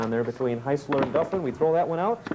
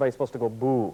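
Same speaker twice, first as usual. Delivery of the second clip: ordinary talk, nothing marked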